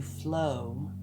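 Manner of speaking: the word "flow" strongly stressed. Giving a card reading, urging to go with energies: stress on FLOW. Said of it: "I put an emphasis on the word flow".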